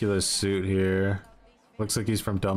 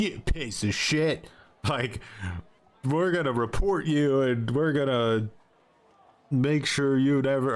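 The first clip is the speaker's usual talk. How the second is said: put-on furious, pissed-off, high-pitched angry rant; 5 semitones higher than usual. Retelling how other players reacted to being threatened in game: imitating angry players. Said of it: "they got pissed off".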